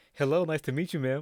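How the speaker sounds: put-on polite educational voice. Retelling greeting her mama on a FaceTime call, in a put-on educational voice. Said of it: "my fucking educational voice".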